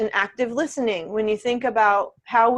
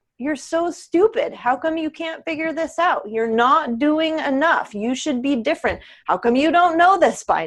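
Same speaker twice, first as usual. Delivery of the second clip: unkind, harsh, scolding, critical tone, pitched up; 5 semitones higher than usual. Showing how a client's inner critic sounds: harsh self-critical tone. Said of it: "you hear the tone in my voice".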